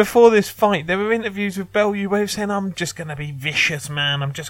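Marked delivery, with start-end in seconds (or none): 2.5-4.3 terrible put-on Scouse accent. Quoting Bellew's pre-fight interview line: terrible Scouse accent as Bellew. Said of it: "Such a terrible Scouse accent".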